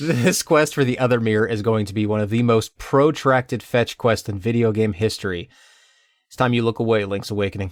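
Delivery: ordinary delivery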